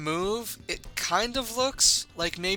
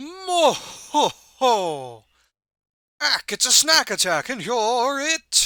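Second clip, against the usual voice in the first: loud, high, goofy cartoon monster voice; 6 semitones higher, 7 dB louder than usual. Narrator voicing the creature Balome mid-game, in a Balome monster voice. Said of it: "I don't know why I gave him that voice".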